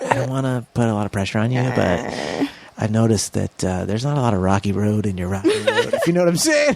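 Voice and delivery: confiding, machine-like stage half-whisper. Imitating how the ice cream thing talks to you, in a half-whisper. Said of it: "I like how it whispers to you".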